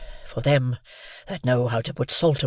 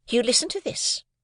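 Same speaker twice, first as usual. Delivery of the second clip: stern, cutting, severe, very high pitch; 11 semitones higher than usual. Reading a story aloud, voicing the sister's aside: severe aside. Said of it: "in a severe parenthesis".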